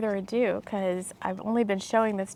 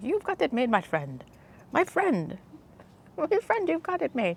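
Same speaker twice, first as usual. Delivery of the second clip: sing-song Indian accent, pitched up, guru-style delivery; 6 semitones higher than usual. The speaker repeats a phrase that comes to them: indian guru voice. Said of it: "like an Indian voice when I, when I say that".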